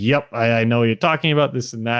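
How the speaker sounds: ordinary talk, nothing marked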